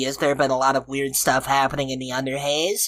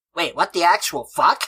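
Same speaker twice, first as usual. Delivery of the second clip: put-on child voice, higher pitched; 3 semitones higher than usual. Asking for help finding a lost compatriot called Laserhawk: Eric Cartman voice. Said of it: "You're so good at this voice".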